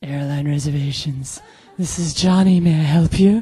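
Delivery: smooth, sultry, seductive phone voice. Speaker imitates housemate Johnny answering airline reservations, in his delicious phone voice. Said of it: "the most delicious nine hundred number phone voice".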